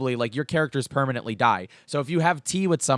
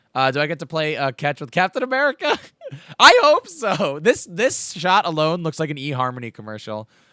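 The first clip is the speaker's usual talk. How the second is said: ordinary talk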